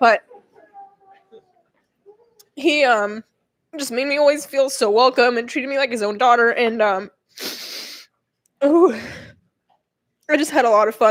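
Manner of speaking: voice holding back tears. Remembering someone who always made the speaker feel welcome: holding back tears. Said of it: "I'm gonna try and not cry".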